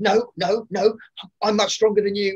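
shrill, very high, upset, defensive outburst. Retelling a scene from the play, imitating Sarah the djinn, upset and defensive. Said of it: "She gets upset".

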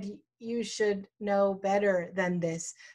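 normal talking voice

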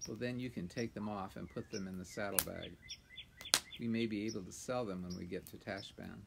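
plain reading voice

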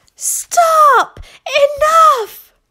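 very high, very loud crying out. As the porridge overflows onto the floor, a mother cries out. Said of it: "cried the mother".

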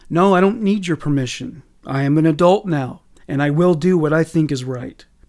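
ordinary delivery

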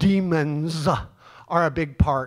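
slow, drawn-out, sermon-style preacher voice. Speaker breaks into a preacher voice mid-explanation. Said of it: "I had to say that like a preacher".

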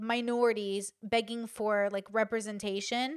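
ordinary delivery

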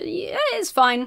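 hesitant, wavering voice. Recapping a scene where a character gets shot, dithering. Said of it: "(Emma dithers)".

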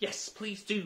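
high, eager, begging pleading voice. Backing up another's request, she answers, pleading. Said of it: "pleaded Alice".

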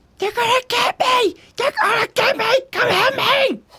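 frantic, panicked scream, very high-pitched. A fleeing character screams while being chased, panicked screaming. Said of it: "he gives out another scream".

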